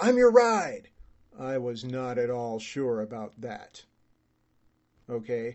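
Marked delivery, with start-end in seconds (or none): 0.0-0.9 put-on, high, loud, shouted yell. Retelling a stranger at the airport calling out: imitating a man yelling. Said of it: "this guy yelled".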